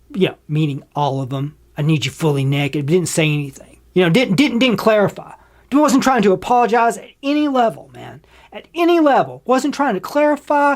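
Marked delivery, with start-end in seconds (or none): 1.7-2.8 put-on creepy voice, lower pitch. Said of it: "his tone of voice, like, "How creepy can I make this?".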